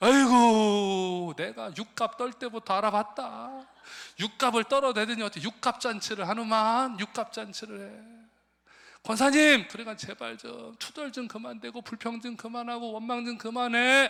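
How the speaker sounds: exasperated, high pitch, very loud.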